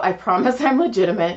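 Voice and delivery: ordinary delivery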